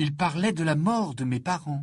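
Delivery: plain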